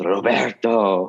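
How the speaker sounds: mock passionate, full of passion. Imitating how Christos says the name: passionate way of saying Roberto. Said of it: "Oh, that's so passionate".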